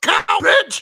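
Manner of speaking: acted-out high yelling. Retelling a wrestler yelling at the ref during a count: imitating Roman Reigns yelling. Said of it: "He just yells at him".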